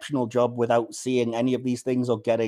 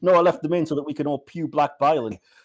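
put-on cheeky, snarky, sarcastic teenage tone; 4 semitones higher, 4 dB louder than usual. Speaker recounting a scene, a girl's cheeky answer to a question, mock-sarcastic retort. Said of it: "she sarcastically responds like".

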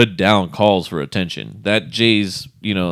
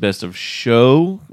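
show stressed, slow, rising. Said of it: "emphasis on the word show".

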